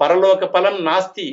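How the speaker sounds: normal talking voice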